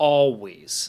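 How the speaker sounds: always said with heavy stress. Quoting a line a man says, with stress on 'always'. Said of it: "The emphasis is on that always thing".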